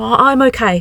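indistinct mumbling. Lessie answers a stranger concerned for her and Luca, mumbled. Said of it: "mumbled Lessie".

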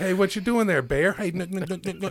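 very high, calling-out voice. Retelling a video of a man calling to a bear: imitating a man calling to a bear. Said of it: "And he's like".

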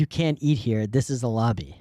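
put-on broken English. Retelling what a hotel front-desk man said to them: imitating broken English. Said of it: "in broken English".

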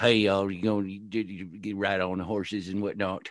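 put-on western character voice. Contrasting the Western he is finishing with his next fantasy novel: Western character voice. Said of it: "all these characters being like".

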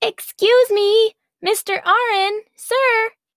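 loud, very high, slow, drawn-out holler. She calls across the pen to Mr. Arin in his cage, yelling. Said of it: "she yelled".

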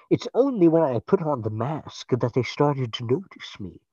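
muffled masked villain voice. Joking about a villain who talks into his mask: Bane voice into his mask. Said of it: "talk like this into his mask".

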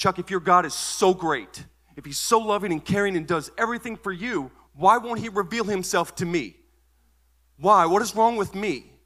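very high, very loud, angry high-pitched outburst. Retelling slamming a fist on the table: retelling a raised-voice outburst. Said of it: "And with raised voice".

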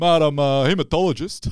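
put-on loud Italian Australian accent. Describing a funny moment in a movie, do Vince Colosimo going full Italian Australian. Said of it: "he goes full like Italian Australian".

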